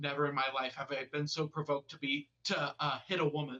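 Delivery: normal talking voice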